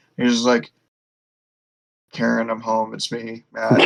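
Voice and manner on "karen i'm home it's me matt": put-on tired voice, lower in pitch and quieter. Imagining Matt coming home tired and greeting Karen: Matt Murdock sounding tired. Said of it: "came home real tired one day".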